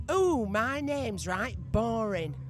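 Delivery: broad, slow northern English accent, laid on thick. Presenter, after a guest commented on their accent, speaks in a broad northern accent. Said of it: "I'm going to say it in a right northern way".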